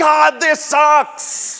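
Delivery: screamed out, very high-pitched. Retelling how an ancient poet screams into the page: imitating someone screaming. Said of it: "the author is just screaming".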